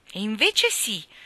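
overly loud, unconvincing delivery. Contradicted, he protests a bit too loudly to be convincing. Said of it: "protestò Davy in un tono un po' troppo alto per essere convincente".

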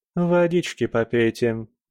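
plain reading voice

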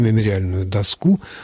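доску stressed on the last syllable, as доскУ.

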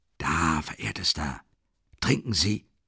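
whispering. Hurrying over with a carafe and glass, he urges the other man; whispered. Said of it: "flüsterte er".

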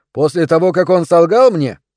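curt, loud, snapped delivery. Narrator reads the first-person hero answering a colleague's suggestion, snapping. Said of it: "огрызнулся я".

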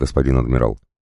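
ordinary delivery

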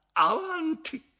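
very high, despairing, desperate cry. Back at his carriage, a man orders the coachman onward: desperate shout. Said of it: "gridò con voce disperata".

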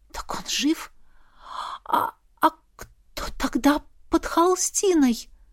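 shy, timid, high-pitched, slow voice. The narrator asks a warrior a question as their eyes meet, timidly asking. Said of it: "робко спросила я".

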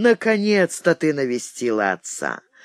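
ordinary delivery, nothing marked

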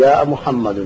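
ordinary talk

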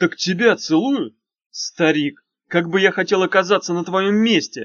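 sudden, loud, high exclaimed outburst. Narrator reads Bagrov responding to Kikimor, exclaiming. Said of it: "воскликнул Багров".

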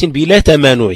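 normal talking voice

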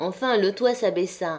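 ordinary delivery, nothing marked

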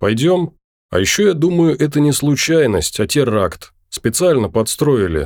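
usual speaking voice

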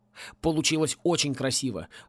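ordinary delivery, nothing marked

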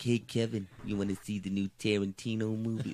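put-on light, lilting New York accent. Retelling a phone call, imitating how the executive talks: Bob Weinstein impression. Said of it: "he talks like this".

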